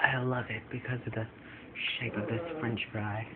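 whispery, very soft-spoken, breathy murmur. Imitating a friend's reply about a french fry: imitating a friend's soft-spoken voice. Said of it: "You are all soft-spoken".

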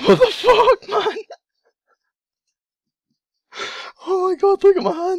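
very high, thrilled, stunned, excited disbelief. Streamer reacting to opening his last case, shaking with excitement. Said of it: "I'm shaking!".

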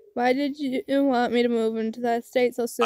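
ordinary delivery

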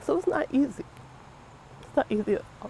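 speaking through tears. A murder victim's mother speaks with a news reporter, crying.

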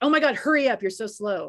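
loud fake yell, just for fun. Speaker shows how she likes to yell at him because she finds it funny: fake yelling. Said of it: "I like to fake yell at him".

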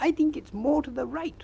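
anxious, nervous, very high-pitched voice. Narrator reads Piglet's reply to Pooh, nervous Piglet voice. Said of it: "said Piglet nervously".

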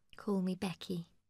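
softly spoken, gentle voice. Narrator reading Becky's reply to a surprised Joss at roulette, soft voice. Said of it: "she replied softly".

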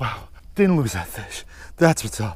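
out of breath. Right after landing a snook, the angler speaks out of breath. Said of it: "I'm out of breath".

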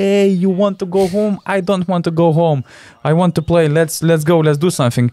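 play-acted wild screaming rant, high in pitch. Retelling how Vidmar came into the locker room, retelling Vidmar's screaming. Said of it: "starts screaming like".

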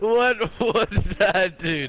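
breathless, tearful laughing fit, cracking up. Right after laughing the hardest ever, laughing to tears. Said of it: "I'm actually crying".

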